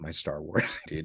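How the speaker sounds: low, hushed whisper.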